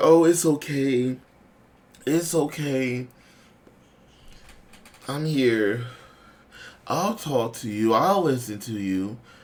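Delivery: slow, soft, soothing, seductive voice. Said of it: "She sounds seductive and seductive, soft tone voice".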